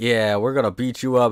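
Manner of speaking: menacing, heavy, threatening, talking-down tough-guy voice. Retelling how tough guys threaten someone: imitating tough guys threatening. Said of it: "all these tough guys are talking to him like".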